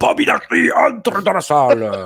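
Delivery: fake mix of Corsican and southern French accent. Speaker recapping wrestling news without the figurine; put-on Corsican and southern accent. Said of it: "je prends l'accent corse en même temps que je prends l'accent du sud".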